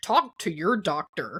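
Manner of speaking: slow, drawn-out radio announcer voice. Retelling how their dad announces during medication commercials: imitating a radio announcer voice. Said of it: "announce in a radio announcer-like voice".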